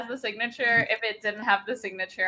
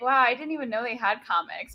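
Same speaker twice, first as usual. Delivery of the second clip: ordinary talk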